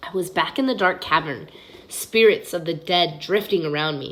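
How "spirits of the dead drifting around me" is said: ordinary delivery, nothing marked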